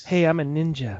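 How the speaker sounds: lazy, unbothered, lackadaisical, offhand delivery. Imitating the movie's lead actor's delivery: imitating a lackadaisical higher-pitched voice. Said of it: "kind of higher pitched voice".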